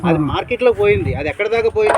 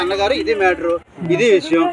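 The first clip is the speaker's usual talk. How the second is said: normal talking voice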